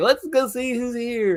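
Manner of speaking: very high-pitched, eager chirping voice. Acting out Pee-wee greeting the doorbell: Pee-wee Herman impression. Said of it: "He's like".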